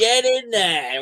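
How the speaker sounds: acted, high, full-throated, top-of-the-lungs shouting cheer. Retelling cheering a goal in a quiet bar: retelling a loud shout. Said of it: "shouted at the top of my voice".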